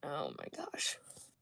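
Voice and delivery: breathy whisper, utterly fed up and done. Narrating a character staring toward the stables, voice his reaction: utterly done, fed up. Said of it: "look on his face of just being so done".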